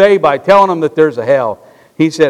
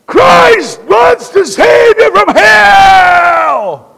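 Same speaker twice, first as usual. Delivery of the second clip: very high, very slow, harsh, antagonistic scream; 5 dB louder than usual. Quoting what Brother Edgar would scream at people: Brother Edgar's mock-harsh scream. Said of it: "he'd scream in an antagonistic voice".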